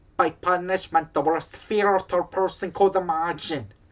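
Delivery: failed Jamaican accent, sounds Scottish. Asked to do a jamaican lady's voice, attempting a failed jamaican accent. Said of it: "That's Scottish".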